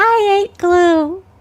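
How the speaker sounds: put-on very high, loud, dopey little-kid voice. Answering a co-host who asks about the Ralph voice: Ralph voice. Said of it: "do you like my Ralph voice?".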